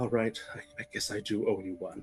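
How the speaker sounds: hushed half-whisper to oneself, very low. A player's character joins the mourners in disguise, half-whispering to themself. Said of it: "and whisper to myself".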